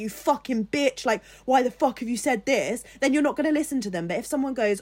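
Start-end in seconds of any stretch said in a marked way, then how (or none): 0.0-2.8 aggressive, heated, cursing and swearing outburst. Explaining why tone matters, acting out someone screaming at you. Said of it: "if someone comes screaming at you".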